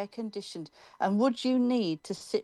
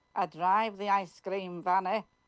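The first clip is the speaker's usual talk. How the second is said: accent from Carlisle. Imitating how a man from the area talks, doing a general Carlisle accent. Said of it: "to imitate a general Carlisle accent".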